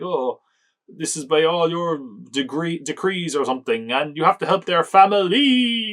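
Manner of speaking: slow, drawn-out delivery, sounds stretched and dragged. Retelling a film character urging the Punisher to help: imitating a drawn-out delivery. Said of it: "he really draws out the sound".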